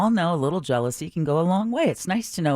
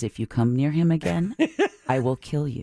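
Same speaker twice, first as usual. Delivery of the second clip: intimate, close, mobster-style threatening voice. Retelling how a woman threatened a rival at a party: imitating a quiet threat. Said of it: "very quietly in her ear says".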